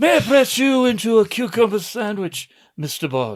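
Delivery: classic British film actor delivery. Imagining the villain's line as James Mason would say it: James Mason voice. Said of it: "older British actors of the era and just do that line".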